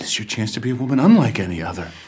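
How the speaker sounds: scary, frightening delivery. In a drama scene, Boris answers a woman begging him to let her go, frightening. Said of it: "you're scaring me".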